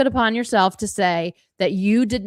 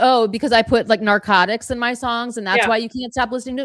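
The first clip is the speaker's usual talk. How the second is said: plain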